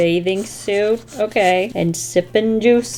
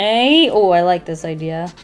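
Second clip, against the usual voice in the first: ordinary talk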